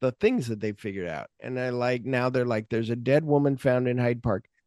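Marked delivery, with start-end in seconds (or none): none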